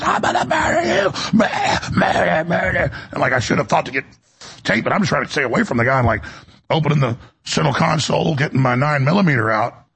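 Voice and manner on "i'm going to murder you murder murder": half-yelled, raving, menacing yell, restrained. Recounting a man running up to cars at a red light, the speaker imitates his screaming. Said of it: "while he's screaming and running up to cars".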